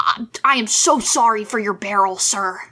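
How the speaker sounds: feigned apologetic, pleading tone. Playing Gideon, apologizing to Muckraker as a deception: fake apologetic plea. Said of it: "that is a seventeen deception check".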